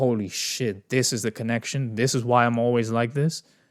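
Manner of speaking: ordinary talk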